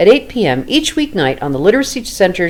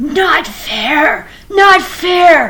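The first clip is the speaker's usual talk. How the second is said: upset, hissed, very high-pitched creature cry; 9 semitones higher than usual. Narrator reads Gollum, frightfully upset at what he thinks is a riddle: hissing voice. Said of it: "He hissed".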